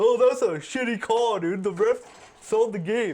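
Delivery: high-pitched, loud, whiny delivery. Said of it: "is gonna do is be like".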